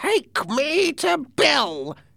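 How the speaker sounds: voice pushed up very high. Reading a story, the blind man grabs the narrator's hand and speaks in a high voice. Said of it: "he said in a high voice".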